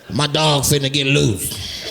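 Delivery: rasped street-slang pilot announcer voice.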